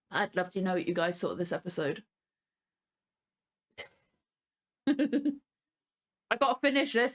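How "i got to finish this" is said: talking between bursts of giggles. A viewer wraps up talking about a show that made them laugh, giggling while talking. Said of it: "I can't stop giggling".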